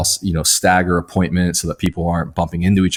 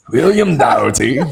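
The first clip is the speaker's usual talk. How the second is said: higher-pitched mock Scottish accent. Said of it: "Sounds like you're, like, Scottish or something".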